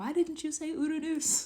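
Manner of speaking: high-pitched, puzzled, confused-sounding voice.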